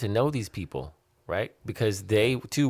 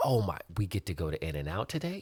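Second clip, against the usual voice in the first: mock excited children, quieter; 5 dB quieter than usual. Imitating the children hearing they get to go to In-N-Out: imitating excited children. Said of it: "they are excited".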